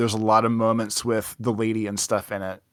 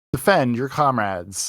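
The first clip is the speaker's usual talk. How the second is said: put-on robot voice; 2 semitones higher than usual. Recalling the old intro voiceover, the speaker does the Zero robot voice. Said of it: "Like the Zero robot voice used to be like".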